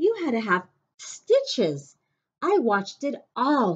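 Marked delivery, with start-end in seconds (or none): 2.4-3.8 thrilled, eager, excited, raised and high. Narrator reads the brother recalling the sibling's injury, excitedly. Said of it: "he said excitedly".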